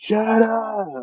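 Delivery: acted, comically unscary yell, very high pitched. Mocking an actor's attempt at a scary scene: imitating Ryan Reynolds trying to yell scary. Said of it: "scenes where he's trying to yell".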